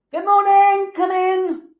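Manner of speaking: distant, very loud, high-pitched calling out. Demonstrating how staff greet children from across the room: calling across a room. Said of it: "Greetings are called from across the room".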